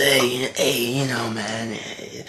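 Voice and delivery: very slow, soft, drawn-out crusty drifter voice. Describing how a guy sounds, imitating him as a crusty homeless guy. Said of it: "he sounds like some crusty homeless guy in the back alley".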